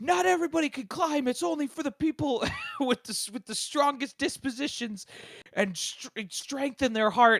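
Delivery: mock yelling, pitched way up, very loud. Retelling what a little kid character says about climbing: imitating a character yelling. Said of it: "yelling at you".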